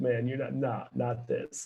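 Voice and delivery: hushed, half-whispered, under-the-breath aside. Retelling how a guest came up at an event: imitating David Ortiz half-whispering. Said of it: "comes up and whispers".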